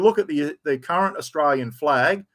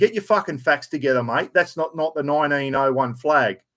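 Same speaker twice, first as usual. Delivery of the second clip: usual speaking voice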